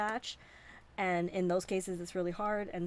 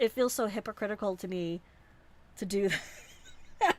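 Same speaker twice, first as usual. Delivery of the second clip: speech broken up by laughter. Explaining why something feels hypocritical, laughing while talking. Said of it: "I'm just laughing".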